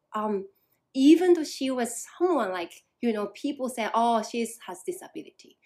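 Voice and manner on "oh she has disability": ordinary talk, nothing marked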